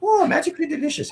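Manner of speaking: bad, very high, leprechaun-style Irish brogue. Admitting to a terrible Irish accent, then doing a bad Lucky Charms guy impression. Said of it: "I have a terrible Irish accent. I sound like the Lucky Charms guy".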